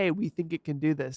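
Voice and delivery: ordinary delivery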